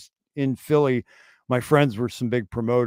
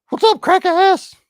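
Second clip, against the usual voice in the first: very high, very loud, shrill, rude puppet voice; 5 dB louder than usual. A self-described worst ventriloquist speaks as the puppet to guests, in a puppet voice. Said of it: "I'm the world's worst ventriloquist".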